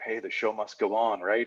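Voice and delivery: soft, hushed, half-whispered aside. Retelling a media guest leaning in on the way out: half-whispering like Terry David Mulligan. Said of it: "whispers in my ears".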